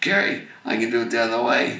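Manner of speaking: excited, very loud, high exclamation. Retelling how someone came up to show him a trick, retelling excited speech. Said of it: "he was all excited".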